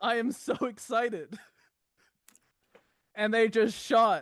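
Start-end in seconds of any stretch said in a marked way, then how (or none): 0.0-1.4 mock over-excited voice, higher. Imitating the people of San Diego hearing the news: imitating excited San Diego crowd. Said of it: "them getting a little too excited".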